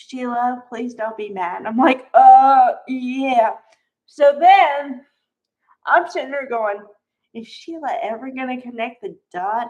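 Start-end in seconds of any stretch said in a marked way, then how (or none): 0.0-1.7 mimicked, quieter mutter under the breath. Retelling what he said to Sheila, retelling a mutter under breath. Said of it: "said something under his breath".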